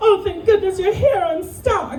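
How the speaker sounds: very high, heavy, laid-on-thick exaggerated voice.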